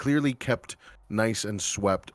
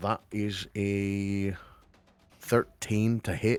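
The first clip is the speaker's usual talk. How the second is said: sudden slip into a Scottish accent. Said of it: "I don't know why I'm Scottish all of a sudden".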